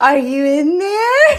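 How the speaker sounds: creepy, high-pitched, very loud call. Repeating a line from a message as a joke: creepy Darla voice. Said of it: "Like Darla from Finding Nemo".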